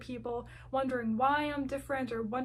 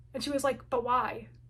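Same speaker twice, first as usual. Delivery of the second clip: plain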